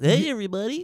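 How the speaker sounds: very high, loud, silly cartoon character voice. Asked who his character is, a player greets everybody in a cartoonish character voice. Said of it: "You sound like a fucking".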